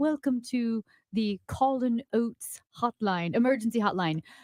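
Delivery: put-on British accent, woman's voice, recorded-sounding. Retelling a phone hotline's recorded menu: imitating a British lady's recorded voice. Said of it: "it's like this British lady".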